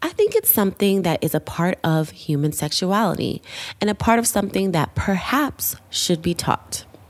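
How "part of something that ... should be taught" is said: ordinary talk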